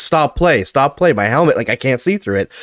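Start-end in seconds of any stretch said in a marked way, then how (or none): none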